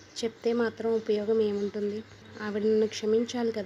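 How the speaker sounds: usual speaking voice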